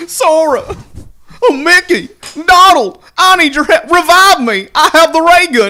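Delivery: very high, loud, hollering cartoon dog voice. Talking about Kingdom Hearts, doing a Goofy voice. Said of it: "if he was Goofy, he'd go help".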